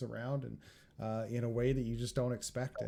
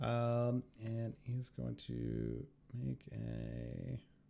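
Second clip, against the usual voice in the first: usual speaking voice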